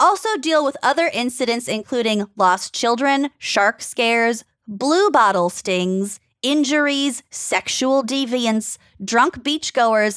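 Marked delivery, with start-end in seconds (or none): none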